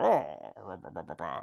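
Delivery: low, garbled gibberish, barely understandable. Retelling a film scene in mumbled gibberish: Bond impression. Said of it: "that's my Bond impression".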